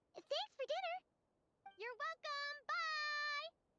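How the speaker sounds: screaming. Character saying goodbye and thanks for dinner, screaming. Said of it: "Why are you screaming?".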